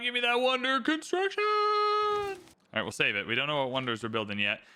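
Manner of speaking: usual speaking voice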